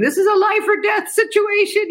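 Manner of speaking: mock tearful voice. Retelling a desperate call to a pharmacy in India, retelling crying on the phone. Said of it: "I'm crying on the phone going".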